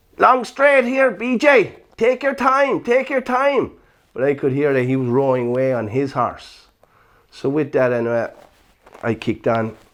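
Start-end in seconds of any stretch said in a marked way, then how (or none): 0.2-3.7 put-on loud, high Northern Irish accent. Recalling what a fellow rider said during a race, use Tony Dobbin's Northern Ireland accent. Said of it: "Tony Dobbin in his Northern Ireland accent".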